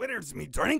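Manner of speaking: Scottish-accented dwarf voice. Imitating how the dwarves talk, in a Scottish dwarf accent. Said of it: "All the dwarves are very Scottish".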